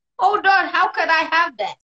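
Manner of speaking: put-on Hong Kong accent. Retelling his reaction when the doctor gave him a diagnosis, Hong Kong accent. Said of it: "That's my Hong Kong accent".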